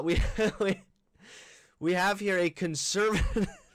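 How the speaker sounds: laughing while talking. Trying to read out a video title with a straight face: laughing while talking. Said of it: "impossible to say it with a straight face".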